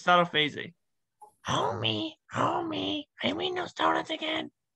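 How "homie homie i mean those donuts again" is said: very high, swooping, soft and slow cartoon voice. In a guessing game, a player does a voice for the other to guess, as Marge Simpson. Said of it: "I am going to do an impression".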